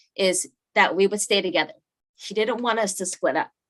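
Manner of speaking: deeply moved, emotional voice. Recounting what he told the family members, getting emotional saying it now. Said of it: "I'm getting emotional saying it now".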